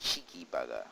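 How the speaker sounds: deep, very low, put-on British accent. Narrating gameplay and showing off a put-on British accent. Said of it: "enough about my accent".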